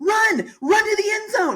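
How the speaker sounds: play-acted, very high, stretched-out yell. Retelling what they yell after every interception: imitating own yelling. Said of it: "I'm yelling".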